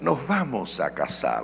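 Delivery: dramatic soap-opera actor voice. Imitating a boyfriend proposing: Central American soap actor voice. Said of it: "así con voz de actor de Centroamérica".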